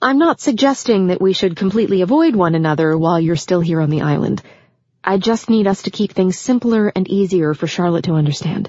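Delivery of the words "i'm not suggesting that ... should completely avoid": ordinary delivery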